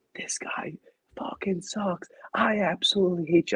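very high, drawn-out, hateful screaming. Retelling yelling at a batter from the stadium stands: retelling screaming at a player. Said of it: "I'm screaming".

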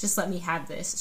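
normal talking voice

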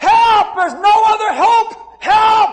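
screaming at full voice, very high and loud. Recalling walking around his garage screaming for help: retelling screaming for help. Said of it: "and I walked around screaming".

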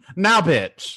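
newscaster-style news-anchor read. Acting out how a woman ends her sentences, in a newscaster voice. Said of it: "still in a newscaster voice".

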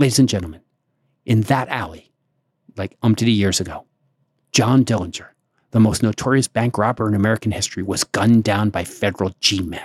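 put-on breathless tour-guide voice. Retelling what a tour guide said to the bus passengers, imitating a breathless tour guide. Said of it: "breathless tour guide, voice".

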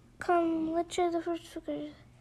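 ordinary delivery

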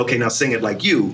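ordinary delivery

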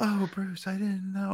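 soft, high, light, breathy voice. Imitating how the actress played every scene: breathy Liv Tyler voice. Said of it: "it was highlighted on her breathy voice".

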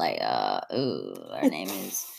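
creaky goat bleat.

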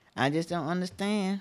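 ordinary talk

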